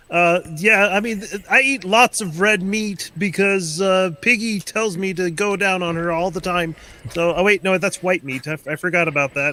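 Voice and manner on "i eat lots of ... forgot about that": very high-pitched puppet frog voice. Doing a Jordan Peterson impression after another speaker mentions it: Jordan Peterson impression. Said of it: "Kermit the Frog kind of a voice".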